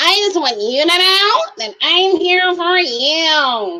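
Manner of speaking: put-on high, childlike preteen voice, you stretched out. Mocking a contestant who sounds like a child: imitating Dale's childlike voice. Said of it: "He sounds like a child".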